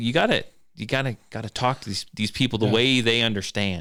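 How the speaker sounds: ordinary talk, nothing marked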